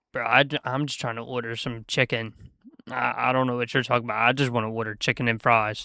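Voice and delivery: ordinary talk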